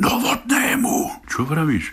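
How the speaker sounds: calling out loudly, pitched high. The speaker retells a cameraman shouting at him from behind the camera, retelling a cameraman's shout. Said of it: "kričí na mňa".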